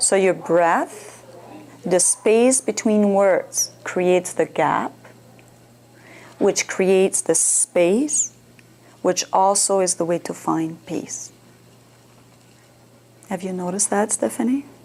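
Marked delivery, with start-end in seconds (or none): 0.0-11.3 slow, deliberate phrasing with spaces between words. Guiding Stephanie to change her breathing, speaking slower with changed cadence. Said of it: "like I speak slower, I, I change my voice, my cadence".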